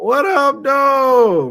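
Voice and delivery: voice cracking up very high. Greeting listeners, the speaker's voice cracks: voice cracking. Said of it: "My voice cracked".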